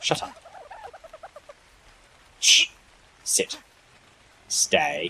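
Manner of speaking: very high, squeaky, silly put-on Brummie accent. You decided on this accent and just keep going with it, half Thomas Shelby, half stupid accent. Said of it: "half Thomas Shelby and half fucking stupid accent".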